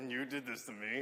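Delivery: eerie, unsettling, creepy put-on voice. Acting out waking in a hospital bed to face an apologizing chaplain: put-on creepy voice.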